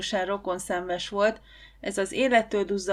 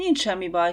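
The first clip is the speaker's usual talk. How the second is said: ordinary delivery, nothing marked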